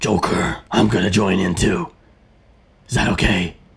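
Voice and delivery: low, gruff superhero voice. After some tea, the speaker says they could do a Batman impression: Batman impression. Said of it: "I could do the Batman impression".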